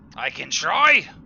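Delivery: very loud, high pirate shout. Narrating a quarrel, the first voice answers the one mocking him, shouting. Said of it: "shouts the first voice".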